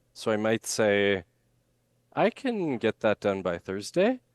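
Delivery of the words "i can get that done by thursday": rising pitch on "thursday". Explaining upward voice inflection with an example sentence, rising pitch on thursday. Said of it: "where I'm kind of saying Thursday ... I'm starting here and then I'm going up".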